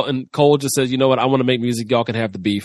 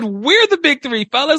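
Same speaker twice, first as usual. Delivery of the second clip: mocking tone pitched much higher; 12 semitones higher than usual. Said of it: "Why you gotta use that tone?".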